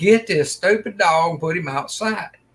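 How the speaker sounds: screamed, called-out loud voice. Retelling yelling at the daughter about the dog: retelling screaming at daughter. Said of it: "I'm screaming at my daughter".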